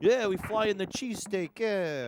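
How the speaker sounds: put-on Italian accent laid on slow and heavy. Retelling how the owner claims he flies in the cheesesteak: imitating an Italian guy's way of talking. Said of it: "He's an Italian guy, kinda talks like that".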